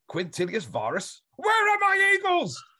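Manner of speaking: very high shrieking scream, rising pitch. Act out the voicemail message recorded for Carl, imitating Brian Blessed screaming. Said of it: "Screamed it".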